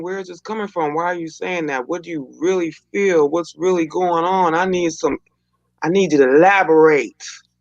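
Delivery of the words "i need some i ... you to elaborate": ordinary talk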